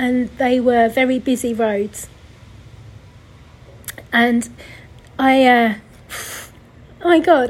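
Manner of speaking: slow, tearful speech, crying through the words. Recording a podcast, recalling a drive near the parents' house, crying while talking. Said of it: "I actually can't believe I'm crying on my podcast".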